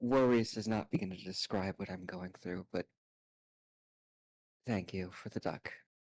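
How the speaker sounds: quiet whisper. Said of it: "you're whispering a little".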